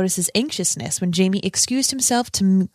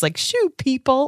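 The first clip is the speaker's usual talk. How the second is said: teasing, mocking jeer, pitched up; 5 semitones higher than usual. Reacting to a scene, the speaker retells what they said back then, mockingly.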